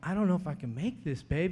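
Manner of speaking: crying, tearful voice speaking through tears. Retelling a call to his wife from jail: retelling his own crying. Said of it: "crying, you know, going".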